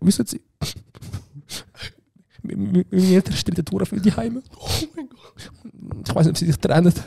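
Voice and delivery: very high, put-on tearful wailing while talking. Retelling a put-on crying excuse about homework, fake tearful bawling. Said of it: "ich fange so an brüllen zu reden".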